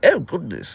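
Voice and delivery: acted English way of talking. Imitating how family members talk, having an english dad: imitating english family's way of talking. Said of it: "people in my family talk like".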